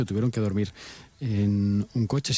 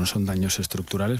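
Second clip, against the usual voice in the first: usual speaking voice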